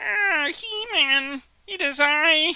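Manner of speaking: very high, very loud, booming silly character voice. A player talking through a game breaks into a silly made-up character voice. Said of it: "I have no idea what this voice is".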